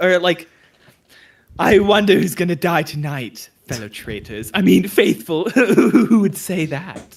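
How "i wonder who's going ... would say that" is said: silly, camp British cartoon villain voice. Showing the planned act as a traitor: stupid cartoon villain voice. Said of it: "a stupid, like, cartoon villain voice".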